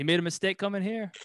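put-on heavy East LA accent. Retelling what an interviewed old man said, super thick accent. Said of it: "like in like a super like chunty accent".

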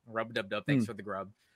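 usual speaking voice

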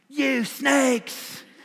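high, fiery hellfire preacher's cry, pitched way up. A preacher imagining reading this verse that way from the pulpit: hellfire and brimstone preaching. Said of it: "I thought the hellfire and brimstone preaching was over".

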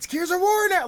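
acted thrilled, very loud, rising excited scream. Retelling a reaction to a game trailer: imitating own excited screaming. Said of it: "I was screaming out".

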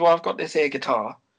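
imitated Cockney accent. Retelling what the paying party host told Juliet, imitating a Cockney accent. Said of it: "He goes full Cockney".

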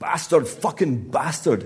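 put-on roaring, loud, high bellow in heavy Scottish accent. A man staggering on stage curses at someone in the wings, bellowing in a thick Scottish accent. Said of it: "he bellowed in a thick Scottish accent".

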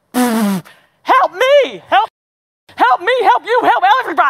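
high, loud, excited echoing voice.

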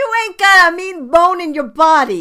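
mixed New York, Boston, Irish accent. Telling another speaker he has no mean bone: mixed New York, Boston, Irish accent. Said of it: "It was like New York, but Boston, but Irish".

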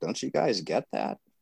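put-on sarcastic tone. Mocking a view to the other speakers: put-on sarcastic tone. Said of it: "I only do that sarcastically".

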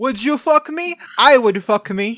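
put-on very slow, loud, drawn-out Italian accent. Joking about an Italian Buffalo Bill: Italian Buffalo Bill voice. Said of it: "What if Buffalo Bill was Italian?".

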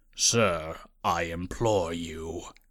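very low, soft, silky-smooth tone. Narrating a character's line addressed to a man, in a low, smooth tone. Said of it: "he said in a low, smooth tone".

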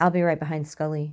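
plain reading voice

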